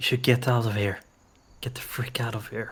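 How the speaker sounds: loud stage whisper. Voicing a character warning a friend: stage whisper. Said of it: "he stage whispers to her".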